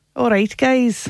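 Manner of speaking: attempted Scottish accent, put-on. After being asked to do it, greeting the group: put-on Scottish accent. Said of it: "Can you do your Scottish accent?".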